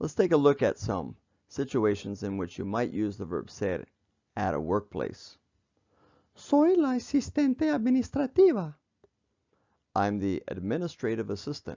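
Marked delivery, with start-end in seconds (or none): 6.3-8.7 very high, put-on lady's voice. Spanish teacher voicing a workplace example sentence as a lady, put-on lady's voice. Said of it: "I used the lady's voice".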